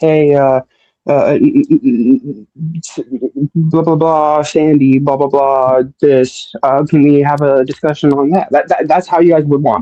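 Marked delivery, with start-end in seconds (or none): 0.0-8.5 very slow, super laid-back, chill niceness. Mocking how the others want them to talk: mock super chill and nice voice. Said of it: "super chill and nice and be like".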